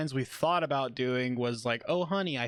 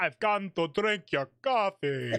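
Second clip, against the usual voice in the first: vampire character voice; 4 semitones higher than usual. After Halloween comes up, a speaker jokes with a vampire impression. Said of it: "was a vampire impression".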